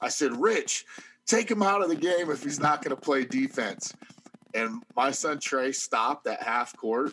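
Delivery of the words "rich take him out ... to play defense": mock yell, loud, high-pitched, carrying. Retelling calling to rich to pull a player: retelling own loud shout. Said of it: "really loud".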